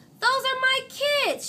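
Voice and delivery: shrill, scratchy, very high, loud rasping voice. Narrator reads Miss Nelson spotting her class out of school, scratchy voice. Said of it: "she said in a scratchy voice".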